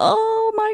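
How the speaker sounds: very high-pitched shocked gasp.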